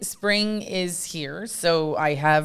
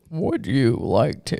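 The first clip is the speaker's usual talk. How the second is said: hammy put-on movie-star drawl, low, slow, dragged; 5 semitones lower than usual. Imitating a movie star's line: Sean Connery voice. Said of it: "you totally sound like Sean Connery".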